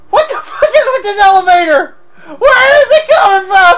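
very high, loud, frightened, panicked outburst. Playing a game, startled by a very fast elevator, scared and panicked. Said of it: "Shit, I'm so scared".

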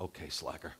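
mock muttering under breath. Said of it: "I said under my breath".

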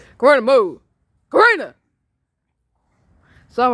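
very loud, shrill, swooping holler. Stopping two dogs from fighting: yelling at a dog. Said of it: "I'm yelling".

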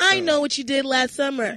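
robotic automated phone assistant voice. Joking about people using a Siri voice: Siri voice. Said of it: "using Siri voice".

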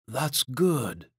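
soft murmur, half under the breath. Narrator reads a man stroking a woman's cheek: murmured. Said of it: "he murmured".

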